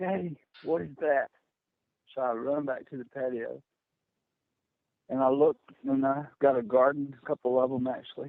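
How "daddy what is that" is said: urgent, frantic, alarmed cry. Retelling how she shouted for him from the door, imitating a frantic shout. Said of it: "she shouts for me with a frantic voice".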